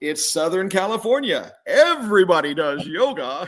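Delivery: radio announcer delivery. Retelling a man's reply to being told he must do yoga, in his announcer voice. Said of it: "in that same announcer voice".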